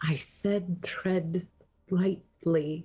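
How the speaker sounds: mumbled quietly, half to herself. Voicing a character in a game, mumbled under breath. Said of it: "Electra just mumbled under her breath".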